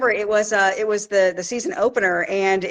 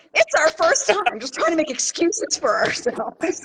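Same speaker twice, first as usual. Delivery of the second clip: put-on awkward, anxious high-school boy voice; 8 semitones higher than usual. Retelling what was said to a fellow handler at a first show: imitating own nervous teenage-boy voice. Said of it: "sound like a little teenage high school boy".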